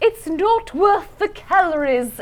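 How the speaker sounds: put-on high, slow, stodgy British old-lady voice. Quoting a baking-show judge on a bake not up to par, Mary Berry stodgy old-lady voice. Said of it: "like a stodgy little old lady British voice".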